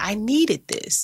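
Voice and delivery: play-acted sobbing through the words, high and tearful. Retelling what a woman said when she called, imitating a woman crying. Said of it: "And she's crying".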